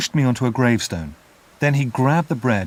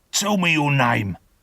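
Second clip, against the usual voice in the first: growled, forceful, demanding tone; 3 semitones higher than usual. Narrator voicing a man demanding the narrator's name, growling. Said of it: "the man growled".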